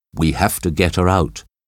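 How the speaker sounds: ordinary delivery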